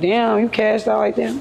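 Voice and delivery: ordinary talk, nothing marked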